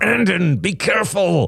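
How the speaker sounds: low growl forced through gritted, clenched teeth. A narrator reads Derek snapping at Brandon over spilled juice, growled through gritted teeth. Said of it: "Derek growled through gritted teeth".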